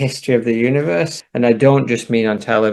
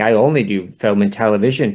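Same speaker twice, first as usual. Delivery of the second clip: ordinary delivery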